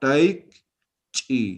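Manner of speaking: taichi split by syllables, tai then chi after pause.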